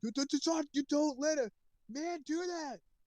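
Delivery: very high, shrill, shrieked scream. Retelling what a friend screamed in the car: imitating a friend screaming. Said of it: "and then he screamed".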